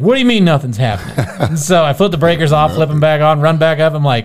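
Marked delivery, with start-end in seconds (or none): none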